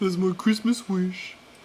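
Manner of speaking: slow, high, drawn-out mock sappy swoon.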